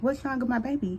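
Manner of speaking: normal talking voice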